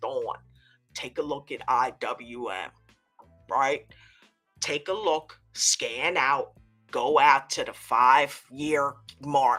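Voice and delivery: imitated deep voice. Retelling what a trader said that morning: imitating a friend's deep voice. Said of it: "he comes in the pre-market with that deep voice".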